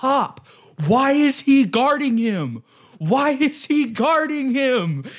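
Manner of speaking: play-acted, very high, drawn-out yelling. Retelling shouting at the coach during a game: retelling own scream. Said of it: "and I scream. I go".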